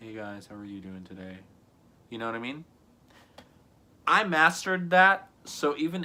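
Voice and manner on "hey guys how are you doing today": sad, downcast voice, much quieter. Showing how the same greeting sounds with different emotions: sad tone. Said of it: "If I'm sad".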